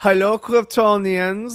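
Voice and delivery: put-on German accent. Imagining the villain Brainiac with a German accent, the speaker voices him: German-accented Brainiac voice. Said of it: "So he's got a German accent".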